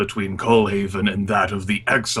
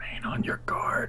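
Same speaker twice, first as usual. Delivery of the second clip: very quiet, hushed, breathy whisper. Role-playing a character as he begins walking with the group: whisper. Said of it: "with like a whisper of".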